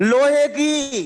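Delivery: loud, slow, drawn-out shout.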